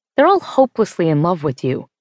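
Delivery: ordinary delivery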